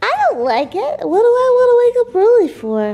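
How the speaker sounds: funny, silly put-on dog voice. Voicing the dog Wyatt answering the parent's question, funny dog voice. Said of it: "you guys said you're really liking the dog voices".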